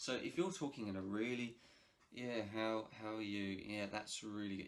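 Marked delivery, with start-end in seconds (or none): 2.5-3.6 bored, flat monotone with no enthusiasm. Showing a greeting that is not engaging, unenthusiastic. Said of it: "If you if you don't sound enthusiastic".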